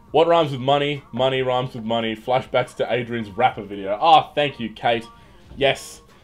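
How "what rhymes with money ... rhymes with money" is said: plain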